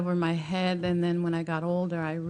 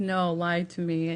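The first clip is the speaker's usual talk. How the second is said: plain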